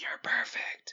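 put-on whispered voice. Recounting how a man leaned in to a woman: retelling a man's whisper. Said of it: "he whispers".

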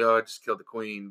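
emotionless, flat, lifeless, dead monotone. Guessing how someone probably said it, imitating a lifeless, emotionless tone. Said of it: "He probably said it like lifeless and emotionless".

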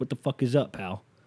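put-on outer-borough New York accent. Describing what sits behind the bush in the driveway, speaker voices it: new york borough accent. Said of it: "He talks like he's from one of the boroughs in New York".

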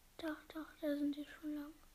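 soft, quiet whisper.

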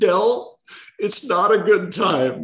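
crying through the words, high, slow, tearful. Retelling what a just-fired woman said to Del: imitating someone crying. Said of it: "and she's crying, and she goes".

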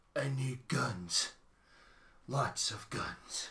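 very slow action-hero voice, each word drawn out. Doing a quote from a trailer: Keanu Reeves voice. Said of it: "is that a good Keanu Reeves impression?".

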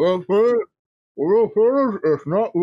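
words pushed round a mouthful. Speaking in character with bread in the mouth: acting with bread in mouth. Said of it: "I take the bread out of my mouth".

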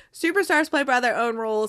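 ordinary delivery

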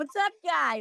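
relaxed Boston accent. Contrasting a trained radio voice with how they talk when comfortable, boston accent. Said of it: "I had no idea you were from Boston. Meanwhile, when I'm comfortable, I'm like".

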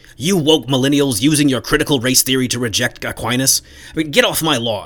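put-on crotchety, cranky, grumbling old man voice. The speaker mocks Truman's argument, Truman as a yelling old man. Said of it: "he really sounds like an old man just yelling at the clouds".

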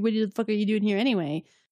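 put-on sarcastic rudeness. Speaker retelling a story where he rudely asks her: imitating a rude sarcastic question. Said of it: "like sarcastically".

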